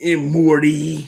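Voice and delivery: loud, high, stretched-out cartoon voice. Greeting a viewer named Morty in the voice of Rick from Rick and Morty. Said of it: "I have to add the voice to it".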